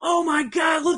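mock thrilled, excited shout, very high pitched. Describing how he reacted at the Evil Dead part, imitating someone yelling. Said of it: "he was yelling".

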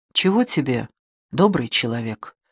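kind and gentle tone. Ho rises from the table to face a stranger, asking kindly. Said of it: "ласково спросил его Хо".

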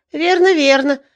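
delighted, joyful, glad cry. Hearing his old story remembered, he answers with a joyful exclamation. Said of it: "радостно воскликнул он".

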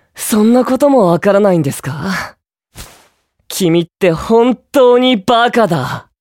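exasperated, fed-up, irritated and annoyed tone. Speaking to a person who has been crying: irritated. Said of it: "イライラするな".

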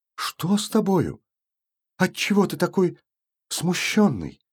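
startled, suddenly alarmed, anxious, worried tone. An aunt, seeing her nephew's face, questions him: suddenly alarmed. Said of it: "вдруг перетревожилась".

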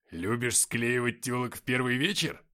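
snide, sarcastic jabbing tone. Narrator reads Nikita questioning the first-person narrator: snide. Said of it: "ехидно спросил Никита".

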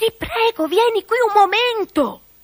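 calling out loudly. A girl calls again to her mother, who is busy with guests, shouting. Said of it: "Gridò Dorina di nuovo".

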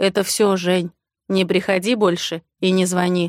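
plain

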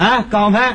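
put-on thick Tianjin accent, friendly, chatty tone. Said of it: "说话天津口音非常的浓".

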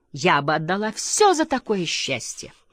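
ordinary delivery, nothing marked

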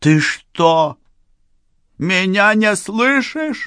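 very high, drawn-out, rising yell. Varya speaks to Sergei about her brother, loud shout. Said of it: "громко закричала Варя".

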